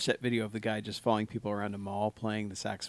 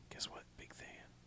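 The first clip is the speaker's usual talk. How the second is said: soft, breathy whispering. Retelling what the Millers said about Big Than: imitating someone whispering. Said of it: "I'm not supposed to whisper in the mic".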